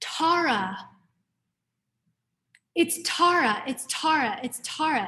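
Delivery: slow, tearful, weeping voice, drawn-out words. Retelling how an old monk rushed over and called her Tara: imitating a crying monk. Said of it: "And he's, like, crying".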